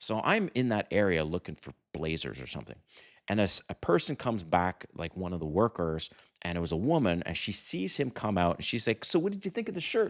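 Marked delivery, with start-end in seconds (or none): 9.0-10.1 very high-pitched, fast and all excited. Retelling a shop worker's question about a shirt: imitating an excited question. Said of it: "She was all excited".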